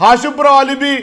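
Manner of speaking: agitated, flustered shouting.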